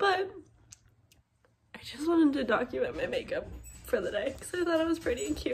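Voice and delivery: speaking while crying. Speaking to the vlog camera while clearly crying. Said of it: "clearly I'm crying".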